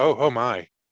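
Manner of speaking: bashful, caught-out exclamation. Playing a character walking in on a man dressing: bashful. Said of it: "be all bashful".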